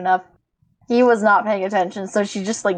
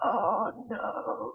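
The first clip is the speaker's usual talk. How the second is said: hushed, whispered mumble under the breath, full of dread; 12 dB quieter than usual. Voicing a character eyeing carnival rides with dread: muttering under breath. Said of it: "muttering on his, under his breath".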